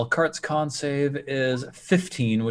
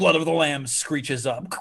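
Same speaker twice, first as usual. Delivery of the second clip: normal talking voice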